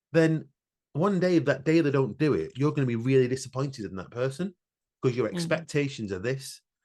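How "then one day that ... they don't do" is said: usual speaking voice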